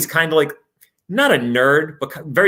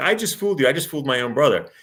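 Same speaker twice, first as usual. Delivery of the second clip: talking through laughter; 3 dB quieter than usual. Retelling a movie scene where a sister fools her brother: imitating someone laughing while talking.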